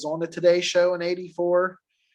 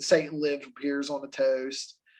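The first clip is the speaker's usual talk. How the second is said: ordinary delivery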